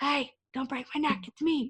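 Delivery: hushed, quiet, soft half-whisper. Recapping a scene, the speaker re-enacts a character's line as a quiet half-whisper. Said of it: "he whispers it really quietly".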